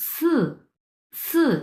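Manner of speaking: pitch falls sharply from high to low on "si". A tone lesson on the fourth tone: sharp falling tone on si. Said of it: "উপর থেকে নিচের দিকে উচ্চারণ আপনার নেমে আসবে সি সি, লাইক দিস".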